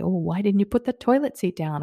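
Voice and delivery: biting, sarcastic little jab. Retelling a past critical remark to a husband: imitating own sarcastic tone. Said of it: "I was very sarcastic with my tone".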